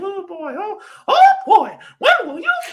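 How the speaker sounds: very high, loud, drawn swooping squeak. Describing jumping around while explaining things to people: Mickey Mouse voice. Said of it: "saying the Mickey Mouse voice".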